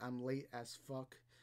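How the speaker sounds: ordinary talk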